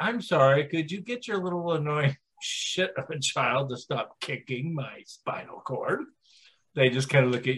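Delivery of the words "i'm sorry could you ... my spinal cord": courteous, mannerly, polite tone. Retelling asking the mother on the airplane to stop her child: retelling a polite request. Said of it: "politely say".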